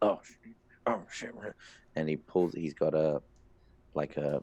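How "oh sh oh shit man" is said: tired, weary dwarf voice. Voicing a fatigued dwarf who spots the party: tired dwarf. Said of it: "he sees you and he goes".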